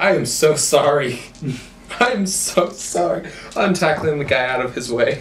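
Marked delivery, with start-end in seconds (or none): 0.0-3.3 high, giggling, fake sorry tone. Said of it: "you don't sound very sorry".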